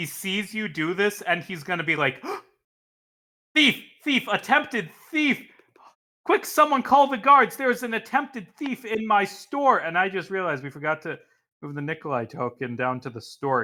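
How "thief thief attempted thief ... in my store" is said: high-pitched shouting. In a tabletop game, a shopkeeper catches an attempted thief, shouting shopkeeper. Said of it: "He was just shouting that from fifty feet away".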